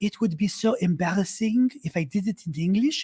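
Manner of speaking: over-the-top, sultry, bad put-on French accent. Retelling a friend refusing an interview in English: bad sultry French accent imitation. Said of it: "And I'm doing a bad version".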